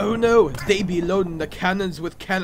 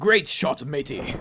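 put-on pirate voice, lower pitch; 5 semitones lower than usual. Playing a game, voicing a character after a good shot; pirate impression. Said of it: "what voice should I do for him?".

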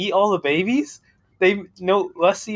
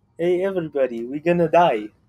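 clumsy, bad put-on Middle Eastern accent. Pushed by the others to do it, attempting a bad Middle Eastern accent. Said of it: "You do it then. You're from the Middle East".

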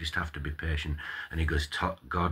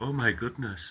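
put-on terrified voice, pitched higher; 8 semitones higher than usual. Imagining Father Spiridon's reaction to a rant: imitating Father Spiridon, terrified. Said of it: "Father Spiridon's terrified".

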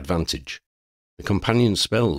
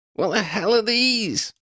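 very high, distressed wailing cry. Narrator reads Lydia's cry as the creatures charge, wailing. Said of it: "Lydia wailed".

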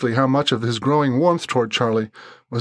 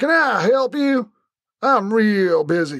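very slow, high-pitched Deep South drawl; 8 semitones higher than usual. Narrating a man answering people at his threshold, in a Southern drawl. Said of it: "he drawled".

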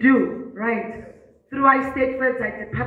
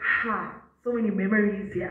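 confiding, hushed stage half-whisper; 3 semitones lower, 4 dB quieter than usual. Retelling a remark to Mister Mayers while sitting there: imitating own half-whisper. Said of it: "I'm whispering to Mister Mayers".

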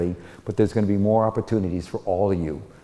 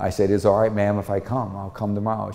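plain

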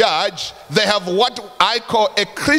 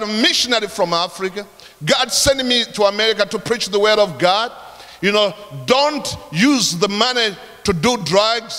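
ordinary talk, nothing marked

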